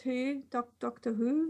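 very slow, funny, stretched, drawn-out delivery. Reading an email aloud, imitating how Robbie says it. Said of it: "I have to say it like Robbie does".

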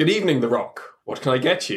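put-on English accent. Playing the bartender Kevin Hart serving The Rock: Kevin Hart with English accent. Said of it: "he has an English accent".

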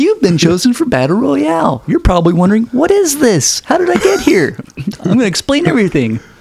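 mock bubbly, very high, swooping, high-energy host voice. Retelling an instructional video's host explaining the rules: imitating a super high-energy woman. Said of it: "she's all super high energy".

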